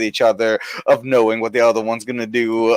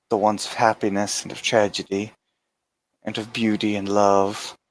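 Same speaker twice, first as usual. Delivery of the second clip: swooning romantic tone, quieter; 6 dB quieter than usual. Voicing a suitor addressing his princess: romantic declaration to a princess. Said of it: "he'll say to you, um, in Pelganese again".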